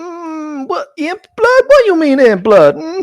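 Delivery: very high buzzing, whining mosquito voice. Voicing a mosquito cloud that a player speaks to: mosquito voice. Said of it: "I have a mosquito voice".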